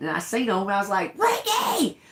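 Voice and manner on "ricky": mock very high-pitched calling scream. Retelling spotting creatures while fishing, calling a friend over: retelling own scream. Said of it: "Screaming him".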